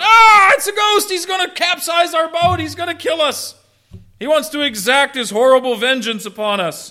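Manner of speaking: very high-pitched, loud, panicked, terrified screaming. Retelling how people in a boat saw a ghost, acting out a terrified scream. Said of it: "they scream out".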